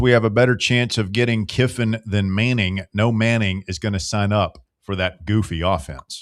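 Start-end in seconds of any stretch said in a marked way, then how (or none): none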